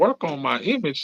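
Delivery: affronted, offended, put-out tone. Retelling answering a record label's call: imitating own offended question. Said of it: "I'm kinda offended".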